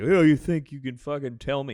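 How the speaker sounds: acted drunk, aggressive voice. Retelling how the drunk guys started getting aggressive, imitating an aggressive drunk. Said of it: "more like fucking aggressive".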